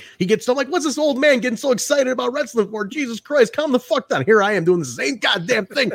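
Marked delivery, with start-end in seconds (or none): 0.7-4.3 mocking ranting voice, raised pitch. Retelling how they made fun of an excited wrestling fan: retelling own mocking rant. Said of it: "I was making fun of him".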